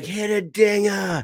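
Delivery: fake Boston accent, high. Recalling Nolan heckling a pitcher at a game, imitating Nolan's Boston accent. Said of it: "I had him talking with a Boston accent".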